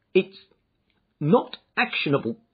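loud, halting, stumbling stammer. Reading the visitor Windibank replying after collapsing into a chair, stammering. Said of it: "he stammered".

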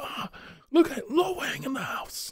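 very high, slow, drawn-out game-hero character voice. Retelling lines from the game Shadow Warrior: imitating the Shadow Warrior character. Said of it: "he goes, he goes".

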